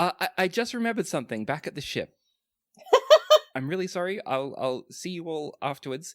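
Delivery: flustered, stammering. Voicing a character who is too flustered after giving a back rub: flustered. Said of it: "too flustered by the time".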